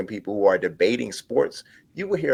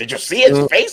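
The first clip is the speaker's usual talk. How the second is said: loud, pointed, accusatory tone; 5 semitones higher, 6 dB louder than usual. Repeating the voice when asked what it was: imitating an accusatory tone. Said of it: "misconception c-, accusatory tone".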